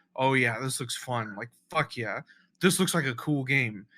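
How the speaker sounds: ordinary delivery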